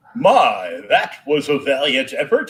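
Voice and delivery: loud, swooping, smug, cocky announcer voice. Recalling failing at an arcade game, imitate the cocky Gauntlet announcer voice. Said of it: "the cocky announcer voice would come on and say".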